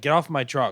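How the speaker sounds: put-on rude, jerky tone. Retelling a bouncer ordering someone off his truck: imitating someone saying it rudely. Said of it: "they said it, like, kind of like a dick".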